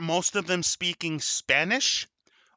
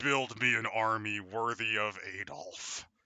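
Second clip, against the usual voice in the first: evil dark-lord voice, very deep, slow and drawn out; 7 semitones lower, 9 dB quieter than usual. Imagining a dark lord calling out during a drug haze: Dark Lord Sauron voice. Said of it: "the Dark Lord Sauron going".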